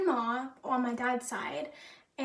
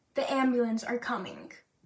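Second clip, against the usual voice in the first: normal talking voice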